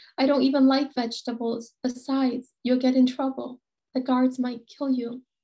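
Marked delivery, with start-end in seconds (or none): none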